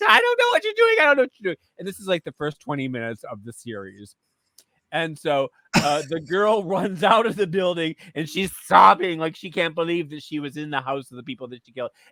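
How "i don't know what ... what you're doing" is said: mock frantic, shrill, rushed screaming, very high pitched. Recounting the first scene of a series, imitating the girl screaming. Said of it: "this girl's like screaming".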